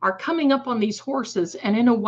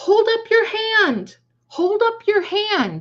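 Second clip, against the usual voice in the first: shrill, very high, loud yelling; 11 semitones higher than usual. Retelling yelling at a boy on a runaway horse: retelling a yell to a boy. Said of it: "I'm yelling at this little boy".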